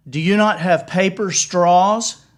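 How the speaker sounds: loud voice pitched to carry. Retelling a passenger's question to the flight attendant: imitating someone speaking loudly. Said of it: "he says really loudly".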